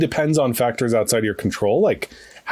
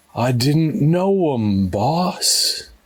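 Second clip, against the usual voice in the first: distant, far-off, echoing ghost voice; 3 semitones higher than usual. Bruno's spirit, called back briefly, answers who did this: Bruno's ghost, echoing from afar. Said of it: "you hear his voice echoing as if from far away".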